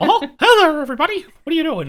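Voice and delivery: shrill, loud and sing-song delivery. Show the voice your niece recognizes, a mediocre Mickey Mouse voice. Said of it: "I can do a mediocre Mickey Mouse".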